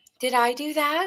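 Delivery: play-acted flirty, playful little tease. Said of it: "they're very, like, teasy".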